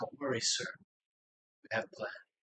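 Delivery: hushed whisper. In a game scene, a man comes over to Sprock and speaks, whispering. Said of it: "this guy comes over and whispers".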